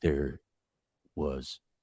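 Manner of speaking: put-on slow, slurring, serious voice. Imitating Johnny Depp's slow, slurring speech: slow slurring Johnny Depp impression. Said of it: "he's so serious sounding".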